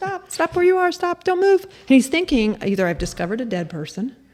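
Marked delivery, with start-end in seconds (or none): 0.0-1.6 very high shrieked screaming. Retelling a run-in with a trail runner: retelling screaming at someone. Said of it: "'cause I'm screaming at him".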